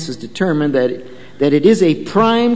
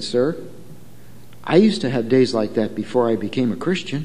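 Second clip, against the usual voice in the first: acted very calm, kindly, soft and low; 5 semitones lower, 7 dB quieter than usual. Telling a story, voicing the policeman's reply to the driver: retelling a calm, kind reply. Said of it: "in a very calm and kind tone".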